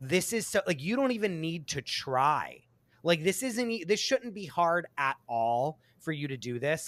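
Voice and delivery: ordinary talk, nothing marked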